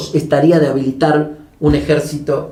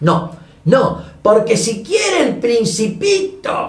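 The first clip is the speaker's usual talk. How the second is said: put-on very high, boozy drunk yelling; 8 semitones higher than usual. Retelling Galtieri shouting from the Plaza de Mayo balcony, mock-drunk. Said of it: "con esa voz de borrachito".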